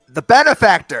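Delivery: loud shouting. Shouting a question into a goblin's ear horn: shouting. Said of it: "No need to shout".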